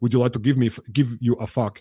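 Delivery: put-on Swedish accent. Giving the other speaker a mock example phrase, in a Dolph Lundgren accent. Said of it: "in like Dolph Lundgren accent".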